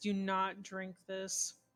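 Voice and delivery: low, mumbled, half-swallowed words. Speaking aside while drinks are being served, mumbled under breath. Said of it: "I'm going to kind of mumble under my voice".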